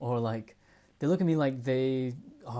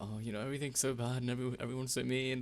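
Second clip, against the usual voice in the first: soft, sad, play-acted woe-is-me moping; 7 dB quieter than usual. Retelling own past words from a day of feeling sad: imitating own past sad self. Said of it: "I was,like,really sad. I was all like".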